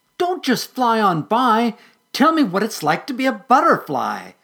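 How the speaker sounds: high, loud shout. Reading a story, a character calls after a departing butterfly: shouting. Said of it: "Patty shouted".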